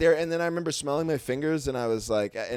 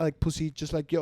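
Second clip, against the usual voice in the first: loosely done, fake French accent; 3 dB quieter than usual. Quoting a woman's answer to his question, put-on french accent. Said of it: "she had some sort of like French accent".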